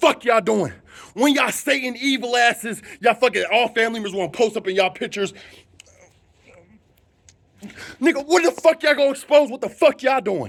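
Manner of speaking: heated ranting. Speaker ranting at family members who post pictures, worked up and ranting. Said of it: "Let me calm down".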